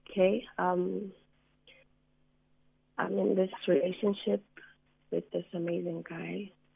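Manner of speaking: somewhat shaky, slightly unsteady voice. A caller begins explaining her relationship to the host, a bit shaky. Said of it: "i'm a bit shaky".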